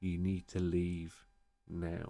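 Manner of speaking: very calm, even, unhurried, with a pause midway. Repeating what a voice said, imitating a calm voice with a mid-sentence pause. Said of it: "it said it kind of like that with a, a pause in between".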